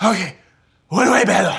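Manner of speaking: put-on slurred drunk voice. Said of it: "he's so piss drunk".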